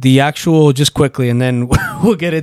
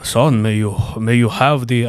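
put-on voice, spoken much slower; 3 semitones lower, 3 dB quieter than usual. Imagining a dad addressing his son, sounding like a Jedi. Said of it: "I don't know why I sound like a fucking Jedi".

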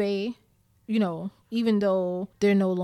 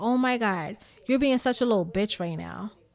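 put-on snapping, sharp New York Bronx accent. Retelling snapping at a man on the phone who wouldn't stop, in a Bronx tone. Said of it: "And I said it in that tone".

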